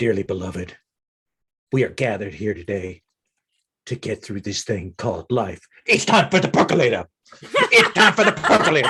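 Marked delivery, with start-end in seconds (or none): 0.0-7.1 very low, deep voice, rising in pitch. Describing the challenger's entrance as the lights go down, in a deep voice. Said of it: "deep voice".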